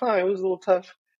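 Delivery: high, offhand, nonchalant voice. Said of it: "so nonchalant, being like".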